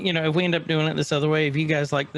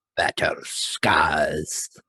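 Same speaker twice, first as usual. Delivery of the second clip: put-on sinister villain voice, lower pitch; 12 semitones lower than usual. Saying a segment title after being asked: Emperor voice. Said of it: "Or say it like the Emperor".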